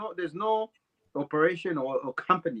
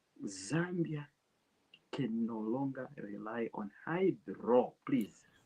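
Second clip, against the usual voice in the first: whispering, lower and quieter; 4 semitones lower, 9 dB quieter than usual. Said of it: "You are whispering".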